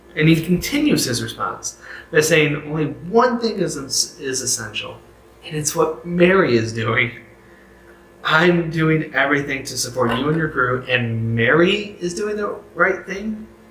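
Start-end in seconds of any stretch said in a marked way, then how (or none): 8.2-13.5 whining tone. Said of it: "Can you hear Martha saying that?".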